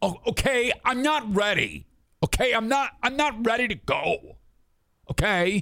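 put-on very high, slow, hostile, annoyed tone. Retelling what she said when he followed her out, imitating her fuck-you tone. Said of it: "uh fuck you uh, tone of voice".

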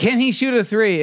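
put-on yelling at high pitch. Retelling how the coach yells at the press: imitating Brett Brown yelling. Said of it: "when he just goes out and yells at the press".

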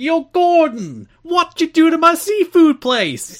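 Italian-American accented speech. Showing how to commit to the accent on the watch-along, committed Italian-American accent. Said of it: "You have to commit to the accent".

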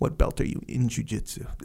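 put-on deadpan tone. Retelling how the listener questioned a man about his jiu-jitsu, mock-deadpan. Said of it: "You're like straight up deadpan".

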